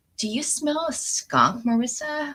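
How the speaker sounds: put-on Mexican accent. Retelling what a woman said walking out of the trailer, Mexican accent. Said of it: "I don't know why I do this accent".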